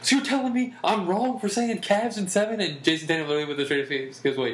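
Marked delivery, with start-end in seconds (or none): 0.0-2.6 all-excited sports pundit voice, pitched up. Retelling a debate seen on ESPN; imitating Jay Williams getting excited. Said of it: "Jay Williams was getting all excited".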